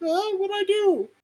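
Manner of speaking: squeaky, pitched way up, drawn-out cat voice. Retelling how the cat reacted to being yelled at: voicing the cat. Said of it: "the actual cat was just like".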